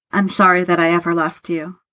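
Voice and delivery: ordinary delivery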